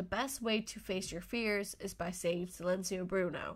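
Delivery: ordinary talk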